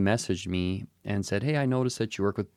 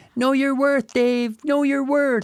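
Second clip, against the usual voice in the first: shrill, very high, loud shouted yell; 6 dB louder than usual. Retelling advice yelled while leaving a meeting: imitating Jack yelling. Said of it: "I'm gonna try and mimic Jack".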